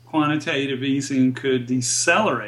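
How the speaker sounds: decelerate stressed, pitch falling at the end. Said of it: "Emphasis on decelerate".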